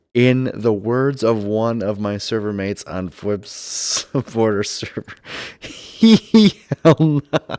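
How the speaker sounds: loud, words breaking up into laughter. Trying to deliver a server mate's punchline, laughing while talking. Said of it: "I was laughing because I knew the punchline was coming".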